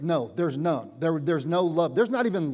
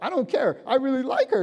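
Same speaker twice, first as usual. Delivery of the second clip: put-on squeaky voice, higher pitch; 8 semitones higher than usual. Acting out a man admitting he likes her: imitating a squeaking voice. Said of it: "And your voice is squeaking".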